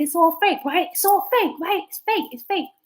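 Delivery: very high, mocking taunt. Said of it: "I'm like".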